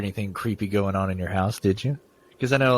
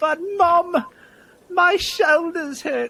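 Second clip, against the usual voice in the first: horrible put-on English accent, very high and slow; 4 dB louder than usual. Reading a scary story aloud, voicing the child's line: horrible English accent. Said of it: "that's a horrible accent".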